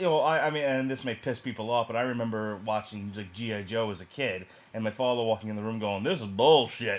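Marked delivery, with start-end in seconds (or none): 6.0-7.0 put-on loud, dismissive Southern accent. Speaker recalls their father walking in on g.i. joe, in a southern accent. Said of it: "I don't know why he has a southern accent".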